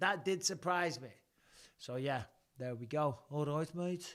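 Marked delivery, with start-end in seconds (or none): 3.3-4.2 Birmingham accent. Showing how people talk in Birmingham: Birmingham accent. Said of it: "This is how they talk in Birmingham".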